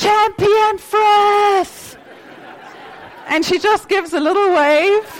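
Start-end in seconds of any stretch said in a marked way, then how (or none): 0.0-2.0 very high, all-out, full-lung shout. Retelling how a husband shouts out of a car door: imitating husband shouting loudly. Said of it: "he shouts at the top of his lungs".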